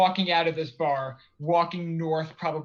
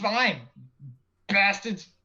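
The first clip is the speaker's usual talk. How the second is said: sudden put-on Boston accent, cabbie style; 4 semitones higher than usual. The dm voicing a character in the game, in a sudden boston accent. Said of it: "Is he from Boston all of a sudden?".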